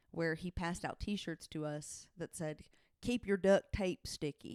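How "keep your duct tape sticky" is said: ordinary talk, nothing marked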